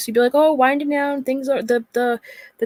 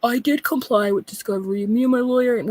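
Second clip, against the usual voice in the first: put-on gravelly, tinny, tin-can weirdo voice. Mimicking what a man tells anybody with a microphone, imitating a weirdo gravel voice. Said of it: "with his fucking weirdo rock voice".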